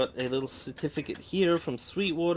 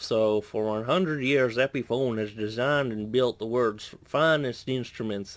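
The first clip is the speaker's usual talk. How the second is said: put-on Southern American accent; 3 semitones lower than usual. Reading a guitar certificate aloud, in a put-on Southern American accent. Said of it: "I don't know why I'm doing this accent".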